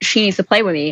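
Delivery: ordinary talk, nothing marked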